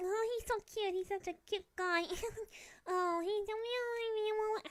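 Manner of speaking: very high, squeaky chipmunk squeak, drawn out. Speaker imitates teenagers in high school, mocking teenager, chipmunk voice. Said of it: "I sound like a chipmunk".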